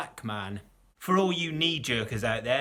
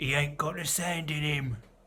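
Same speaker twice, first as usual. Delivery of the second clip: put-on Cockney accent. Quoting a line from a television show, cockney impression. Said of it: "that's my Cockney impression".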